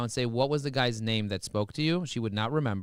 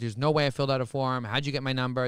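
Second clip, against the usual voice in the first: put-on argumentative, combative tone. Acting out a caller who argues about filling out a form: imitating someone arguing. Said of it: "starts arguing with me about that".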